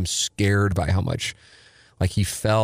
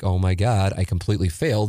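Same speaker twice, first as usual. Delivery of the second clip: plain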